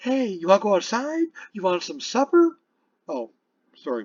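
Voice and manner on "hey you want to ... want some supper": put-on high-pitched baby talk, pet-talk voice. Showing how one talks to a dog: talking to a dog. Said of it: "if I'm talking to the dog, I'll say".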